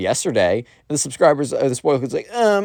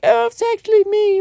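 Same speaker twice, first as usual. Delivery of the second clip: very high, put-on girly voice. Retelling what a kid would say on a call: imitating a fake girl voice. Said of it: "try and make a fake girl voice and be like".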